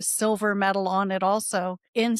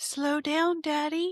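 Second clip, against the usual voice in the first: put-on small, high five-year-old child's voice; 7 semitones higher than usual. Retelling mom's story of riding along as a small child: five-year-old child's voice. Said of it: "five-year-old voice".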